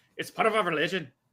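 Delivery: put-on Irish accent. Retelling a book scene, quoting the character Tommel: Tommel in an Irish accent. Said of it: "Why did he become Irish?".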